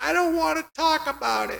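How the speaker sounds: tiny, very high, squeaky voice. Retelling her own answer when an instructor shouted asking if anything was wrong, in a high, squeaky voice. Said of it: "In a high, squeaky voice".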